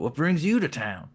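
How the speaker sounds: put-on Appalachian accent. Narrator voicing a man who changes his voice to disguise it, attempted appalachian accent. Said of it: "trying to imitate uh, Appalachian accent".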